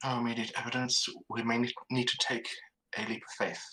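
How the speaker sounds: loud stage whisper. Speaking in character, quiet enough not to be heard by other rooms: stage whisper. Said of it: "I'm going for a stage whisper".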